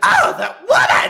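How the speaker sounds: high, loud, complaining tone. Retelling a backstage segment where Stephanie complains: imitating Stephanie complaining. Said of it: "she's like".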